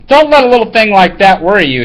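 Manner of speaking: ordinary talk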